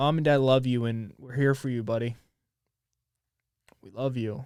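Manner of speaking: tearful, crying while speaking. A father addresses his young son directly, crying. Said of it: "I won't cry".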